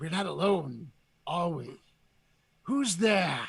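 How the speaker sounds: sinister, demonic, evil-sounding voice. Describing a game creature's line, quoting it in a demonic evil voice. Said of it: "the demonic, you know, evil sounding voice".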